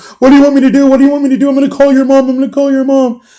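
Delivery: weeping, high, tearful, repeated crying pleas. Retelling a friend crying outside the police car: imitating someone crying. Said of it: "Glali's out there crying".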